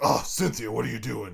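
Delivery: gruff put-on character voice. Recalling a game, calling Chuck's character Cynthia, gruff character voice. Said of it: "I had that gruff voice".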